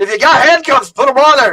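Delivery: loud, high-pitched shouting. Narrating a scene, a voice calls out over the comms, shouting over the comms. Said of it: "you hear a ransom shout".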